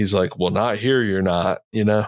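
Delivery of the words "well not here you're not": put-on thick Southern accent. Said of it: "Like the super thick hu-, Southern accent".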